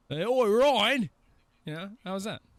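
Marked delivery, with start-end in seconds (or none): 0.1-1.1 put-on British accent, much higher. Showing the other players, a speaker tries a British accent learned from Tracer. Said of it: "siphoned British accents out of me".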